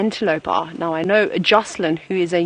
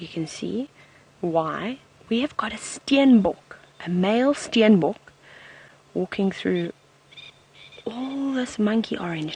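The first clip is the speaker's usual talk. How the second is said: speaking in a whisper; 2 semitones higher, 5 dB quieter than usual. Pointing out a passing male steenbok to everybody, whispering. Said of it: "Now I'm whispering".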